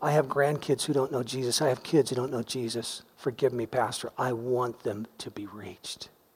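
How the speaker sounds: soft, tearful voice, speaking through tears. Retelling what a weeping man said to the pastor, imitating speaking through tears. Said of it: "He just spoke through them".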